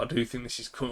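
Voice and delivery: voice cracks mid-word on coming. Discussing support and resistance levels, voice cracking mid-sentence. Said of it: "my voice cracked".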